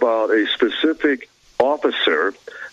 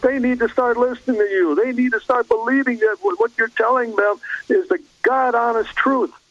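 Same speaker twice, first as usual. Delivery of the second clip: mock yelling, very high pitched; 12 semitones higher than usual. Retelling a man who heckled the audience, retelling a man yelling. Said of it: "I'm yelling at these people in the audience".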